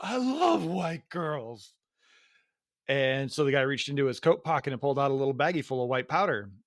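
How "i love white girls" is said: mock very slow, drawn-out drunk voice. Retelling a bar story: imitating Scotty drunk. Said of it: "being very drunk, was like".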